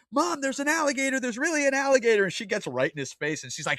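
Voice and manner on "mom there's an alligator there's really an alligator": put-on very high, shrill, yelling child voice. Telling a story about a boy running in to his mom, imitating a kid yelling. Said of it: "he's like yelling".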